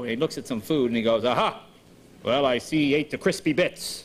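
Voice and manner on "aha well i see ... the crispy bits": slow fake American accent, English accent slipping through. Recalling a Masterpiece Theater detective show, the speaker imitates an Englishman's fake American accent. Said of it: "this guy was obviously an Englishman doing American".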